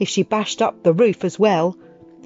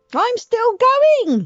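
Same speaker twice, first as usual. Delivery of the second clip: put-on old screechy grandma voice, much higher, slower. Narrator reads Grandma calling down from up above, in an old screechy voice. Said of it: "came the old screechy voice from up above".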